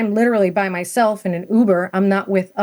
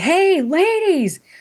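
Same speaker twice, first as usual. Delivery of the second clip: put-on, piercing, very high scream; 9 semitones higher than usual. Retelling calling out to ladies followed into a hotel: imitating a scream. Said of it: "and just screamed".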